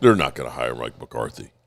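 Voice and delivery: very low, deep put-on voice. Repeating the other speaker's line in their voice: put-on deep voice. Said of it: "I always use your deep voice".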